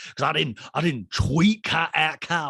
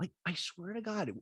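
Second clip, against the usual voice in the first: usual speaking voice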